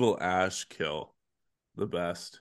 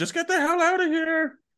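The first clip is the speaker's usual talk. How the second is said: very high, shrill, loud screeching scream; 7 dB louder than usual. Retelling movie lines, a skeleton running by fast: imitating a skeleton screaming. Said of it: "he screams as he runs away".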